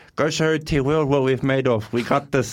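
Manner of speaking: put-on leprechaun voice. Quoting what his dad would say, imitating dad like a leprechaun. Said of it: "He's talking like he's like a leprechaun".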